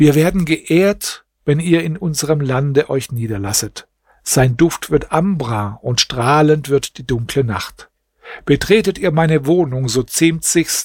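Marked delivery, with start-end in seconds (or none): none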